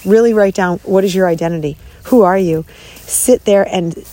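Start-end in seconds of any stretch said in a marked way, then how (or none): none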